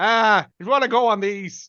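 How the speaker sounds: put-on thick Northern Irish accent throughout. Describing an actress in a show, quoting what she says, strong Northern Irish accent. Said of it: "she's got a very strong Northern Irish accent".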